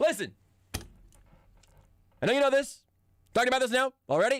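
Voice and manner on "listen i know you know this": strong talk radio host voice, higher pitch. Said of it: "like a good talk radio host".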